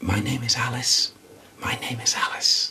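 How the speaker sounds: very quiet, hushed, fully voiced spirit voice. Retelling what a spirit said to the medium: retelling a quiet low-pitched voice. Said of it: "very quietly, not whispered, said quite, but it was in a low pitch".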